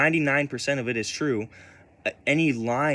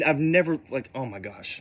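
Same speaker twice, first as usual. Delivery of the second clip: ordinary talk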